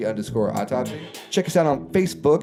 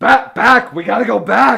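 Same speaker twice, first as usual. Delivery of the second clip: frantic scientist voice, much higher, louder; 11 semitones higher, 8 dB louder than usual. Keeping up a bit while the other speaker objects, in a Doc Brown voice. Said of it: "will you stop doing the Doc Brown voice?".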